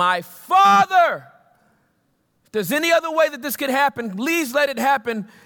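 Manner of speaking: loud, high calling out. Acting out a man crying out in prayer to his Father, retelling a loud cry. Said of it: "He is speaking loudly".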